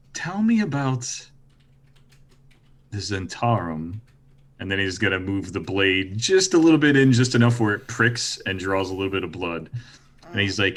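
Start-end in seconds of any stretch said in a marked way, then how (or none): 0.1-4.0 whispered, slower pace. Leaning closer with a blade, he asks someone into their ear; whisper. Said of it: "he's just gonna like whisper in one of their ears".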